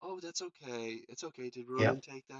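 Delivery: soft, hushed, gentle, soothing and comforting tones. Retelling running up to comfort a scared young son: imitating soft tones. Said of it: "we use soft tones".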